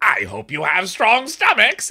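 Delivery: cackling, loud, sing-song, swooping villain holler. Narrator voicing Dorian calling out to the group: Dorian yelling. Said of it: "they hear Dorian yell".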